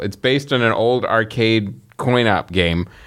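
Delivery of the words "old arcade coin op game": ordinary talk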